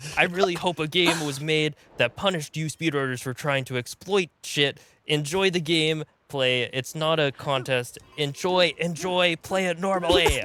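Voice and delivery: high-pitched, fake, all-out yelled rant. Reading aloud an all-caps comment about speedrunners: mock yelling. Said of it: "so I'm yelling".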